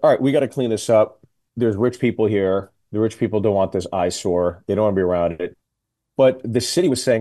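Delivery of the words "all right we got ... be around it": ordinary talk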